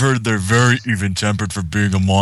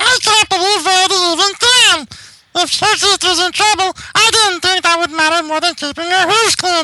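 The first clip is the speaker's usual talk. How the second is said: put-on old, squeaky voice pitched way up high. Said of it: "An old squeaky voice".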